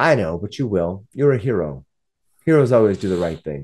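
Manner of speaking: smug, self-satisfied, confident, knowing tone. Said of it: "She kinda smiles".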